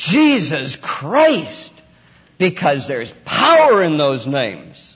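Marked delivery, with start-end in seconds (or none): 0.0-1.7 slow, loud, forceful, exasperated delivery. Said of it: "You say".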